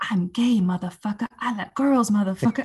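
put-on whisper. Retelling ripping up a paper of fears in a corner: imitating own whisper. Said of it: "whispering in a corner".

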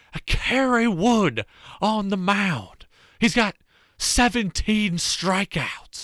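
put-on old-time baseball announcer voice. Recall the iconic broadcaster you listened to during Cubs games, with a Harry Caray impression. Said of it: "I would listen to Harry Carey all the time".

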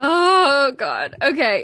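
anxious, frantic, high, loud, swooping freak-out. Starting the weekly recap with her co-host: freaking out. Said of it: "I'm freaking out, if you can't tell".

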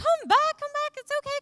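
high-pitched shouting call. Retelling calling a boy back across a store: imitating own shout across a store. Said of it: "here's me shouting across the store".

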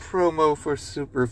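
plain reading voice

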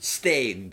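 startling, loud, aggressive one-word bark. Listing favourite rock bands to the other speaker: said very aggressively. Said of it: "You said that very aggressively and it gave me a fright".

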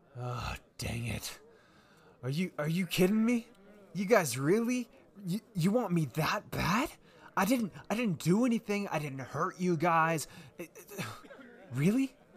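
high, exasperated, disbelieving, stammered delivery. Voicing a tripped, cornered man who looks up and complains: exasperated NPC voice. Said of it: "He looks up at you and says".

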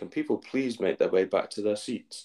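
usual speaking voice

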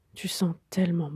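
soft, low murmur. A man holding a woman in his arms speaks to her; murmured.

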